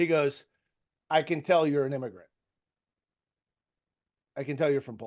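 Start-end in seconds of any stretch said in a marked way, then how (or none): 1.1-5.1 put-on thick Croatian accent. Retelling an older dad at a barbecue talking to him, imitating a thick European accent. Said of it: "very thick accent".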